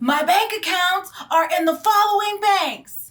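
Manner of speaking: play-acted all-out scream, very high and shrill. Retelling a phone call while walking outside the Target: imitating own past screaming. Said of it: "as I was walking outside and I was screaming".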